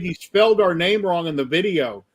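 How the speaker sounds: ordinary delivery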